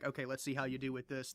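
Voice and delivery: ordinary delivery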